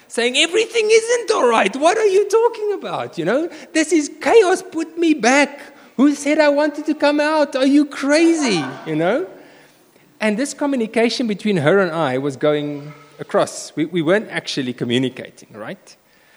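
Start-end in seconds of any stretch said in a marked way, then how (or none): 0.3-8.6 play-acted very loud, shrill, high-pitched voice. A parent retells their daughter speaking back to them, in a very loud voice. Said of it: "speaking back to me in a very loud voice".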